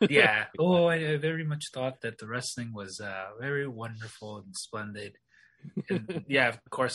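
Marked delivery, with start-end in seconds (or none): 0.6-5.2 put-on poetic voice, lower. Cued by another speaker to chime in, in a poetic voice. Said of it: "Neil comes in with his poetic voice".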